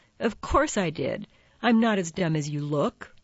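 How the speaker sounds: usual speaking voice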